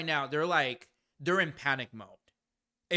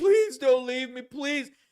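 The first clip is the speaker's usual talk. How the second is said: loud, high, bawling, begging sobbing voice; 9 semitones higher, 5 dB louder than usual. Acting out a girlfriend begging not to be left: imitating a bawling, begging woman. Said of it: "just bawling her eyes out".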